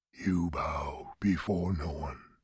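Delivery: hushed, soft, very low voice. Narrator reads Sa'avan speaking to Galia after she bowed, in a soft voice. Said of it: "Sa'avan said in a soft voice".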